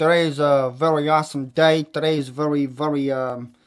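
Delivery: trying out Italian accent. Greeting his audience and trying out an accent, trying an italian accent. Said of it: "me trying my Italian accent out".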